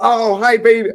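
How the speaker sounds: shrill, very loud and very high-pitched voice. Retelling her standing up in a restaurant to say hi, loud greeting. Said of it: "baby, indoor voice".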